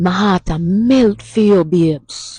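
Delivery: mildly passionate, impassioned delivery. Speaker models a phrase for listeners to repeat, with a little passion. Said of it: "give it a little passion".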